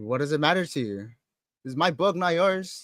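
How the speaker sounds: hostile, guarded, defensive and aggressive tone. Voicing a character questioned by Gemma about what they're doing: defensive and aggressive. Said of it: "real defensive and real aggressive".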